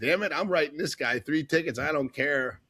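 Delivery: ordinary delivery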